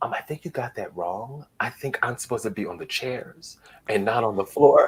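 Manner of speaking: very soft, quiet voice. Retelling how they corrected a woman, in a very soft voice. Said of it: "It was a very soft voice".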